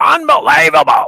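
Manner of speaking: belted out high and loud. Giving a tagline example, imitating Johnny Most.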